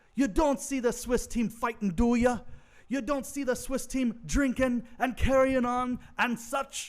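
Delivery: put-on loud Jamaican accent, pitched high. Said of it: "I'm gonna do it just like he does it in the movie".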